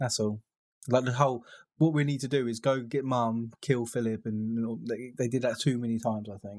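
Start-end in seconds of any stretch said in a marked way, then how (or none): none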